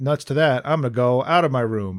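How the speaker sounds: plain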